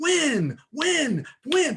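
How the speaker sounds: fired-up, overexcited, high and fervent delivery. Speaker addressing listeners, admits to screaming at them, screaming. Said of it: "I know I'm screaming at you".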